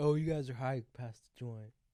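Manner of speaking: put-on drunk man voice. Speaker acting out what he says to friends who are high, put-on drunk guy voice. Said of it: "in my drunk guy voice".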